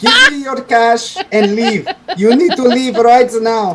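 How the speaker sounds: very high put-on Indian accent. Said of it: "do your best Indian accent".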